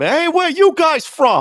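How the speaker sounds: put-on Boston accent, yelled high. Imagining being yelled at tonight, mock-yelling in a Boston accent. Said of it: "yelling at me in a Boston accent".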